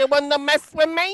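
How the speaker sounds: put-on little man voice. Imitating a part of the track: little Josie voice. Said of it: "It sounded like a little guy voice".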